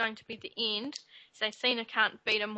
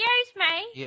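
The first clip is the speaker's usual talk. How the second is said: put-on shrill annoyed voice, higher and louder; 12 semitones higher, 6 dB louder than usual. Retelling a wrestling segment, imitating Vickie Guerrero's "Excuse me". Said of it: "I think you are her".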